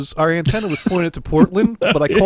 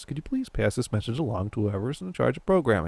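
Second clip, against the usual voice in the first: soft, hushed, very calm, deliberately even-tempered voice; 6 semitones lower, 9 dB quieter than usual. Retelling a voicemail left for whoever's in charge: retelling own very calm voice. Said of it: "said in a very calm voice".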